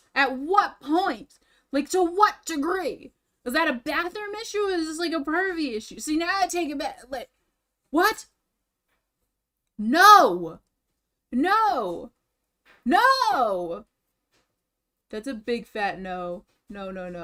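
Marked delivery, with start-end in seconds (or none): 9.7-13.8 very slow, stretched-out loud yelling of "no". Reacting to a video while painting on stream: yelling no loudly. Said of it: "I'm being kinda loud".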